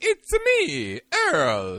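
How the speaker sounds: very high, loud, swooping, squeaky sing-song voice. Signing off a game episode, announcing yourself in a high-pitched voice. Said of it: "your voice is so much higher".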